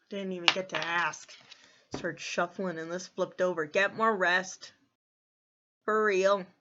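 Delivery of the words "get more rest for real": loud, slow, serious, authoritative commanding voice. Giving a message while shuffling cards: commanding voice. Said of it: "I said that with commanding voice".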